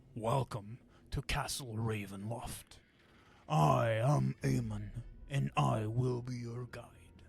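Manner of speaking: low, deep character voice in deepest register. Game master voicing Aemon, guide welcoming players to Castle Ravenloft: lower voice for Aemon. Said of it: "I will pick another lower voice for him".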